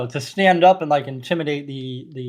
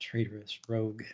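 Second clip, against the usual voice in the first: very hushed, low muttering under the breath; 5 semitones lower, 14 dB quieter than usual. A character glances at a companion and mumbles under his breath. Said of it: "just kind of mumbles under his breath".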